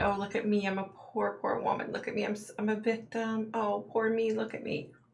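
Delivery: put-on self-pitying, pitiful, whiny poor-me voice. Mocking a defendant playing the victim: mocking a poor-victim voice. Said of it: "when she tries to play that".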